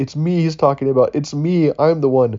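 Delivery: woman's voice, high and loud.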